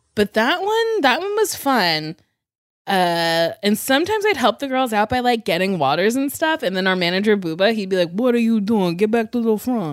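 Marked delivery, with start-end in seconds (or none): 8.1-10.0 put-on hybrid of Italian and New York accents. Retelling what the manager said: imitating an Italian New York hybrid accent. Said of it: "Italian New York hybrid".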